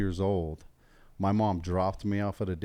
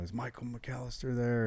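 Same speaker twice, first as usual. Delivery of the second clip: put-on thick, heavy Mexican accent, much quieter; 4 semitones higher, 6 dB quieter than usual. Retelling what a caller on the phone asked; thick Mexican accent. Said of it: "they had these thick Mexican accents".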